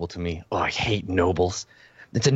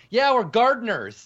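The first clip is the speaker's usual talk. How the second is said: very high shouted call; 13 semitones higher, 3 dB louder than usual. Voicing a guard with a sword who shouts out: shouting out. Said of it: "he shouts out".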